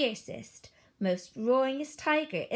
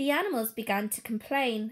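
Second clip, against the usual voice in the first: plain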